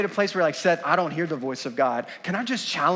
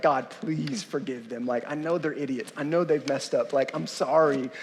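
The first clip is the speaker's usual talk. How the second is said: mock, humble, imploring, begging voice; 4 semitones lower, 4 dB quieter than usual. Preaching on Numbers chapter fourteen, acting out a prayer: imitating someone pleading. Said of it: "he's like pleading".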